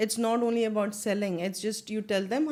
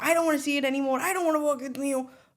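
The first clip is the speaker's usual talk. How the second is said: mock scream, higher pitch; 5 semitones higher, 3 dB louder than usual. Retelling what a man viewing an under-construction apartment said, imitating someone screaming. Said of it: "Kept screaming at me".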